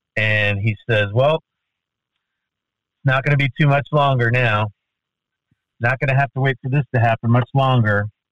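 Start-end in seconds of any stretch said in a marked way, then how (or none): 1.2-8.1 grumbling, half-mumbled moan. Walking down the fairway, the speaker imitates the man mumbling and moaning. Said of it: "he starts mumbling and moaning".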